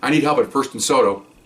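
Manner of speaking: ordinary talk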